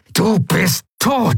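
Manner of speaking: very high pitch, spoken through clenched teeth. A fighter, struggling over a weapon in a corridor, speaks through gritted teeth. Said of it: "brachte er mit zusammengebissenen Zähnen hervor".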